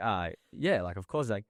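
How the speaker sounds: ordinary delivery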